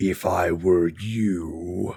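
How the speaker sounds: low, sinister, menacing, slow, "you" drawn out. Telling a story, the speaker voices a mysterious voice: sinister dripping voice. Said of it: "The words drip like blood".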